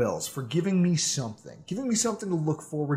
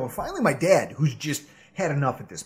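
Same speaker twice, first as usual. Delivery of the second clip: normal talking voice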